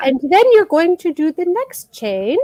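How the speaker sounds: put-on sweet British accent. Imitating a crochet tutorial host's way of talking: sweet British accent. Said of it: "I don't do that accent very well".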